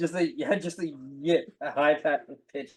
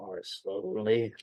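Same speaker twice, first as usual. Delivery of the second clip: muttering under breath, much lower pitch; 4 semitones lower, 5 dB quieter than usual. A character cutting through a wall with a laser, muttering to himself. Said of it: "muttering to himself".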